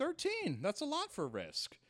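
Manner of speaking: very high, sing-song, swooping swinging pitch. Retelling what Pete Holmes said about the pre-sales: Pete Holmes impression. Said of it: "that was a good Pete Holmes impression".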